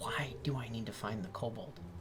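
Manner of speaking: soft, hushed, unvoiced whisper.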